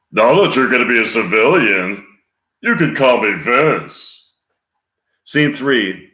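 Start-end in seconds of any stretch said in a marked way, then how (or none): 0.1-4.3 growling voice with a friendly tone. Scene two: Sergeant Carter to a soon-to-be civilian, gruff fake-nice voice. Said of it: "Sergeant Carter in a gruff voice while pretending to be nice".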